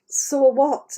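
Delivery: normal talking voice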